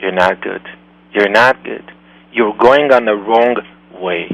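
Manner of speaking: quiet whispering voice. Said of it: "voice whispers".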